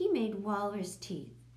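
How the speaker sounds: plain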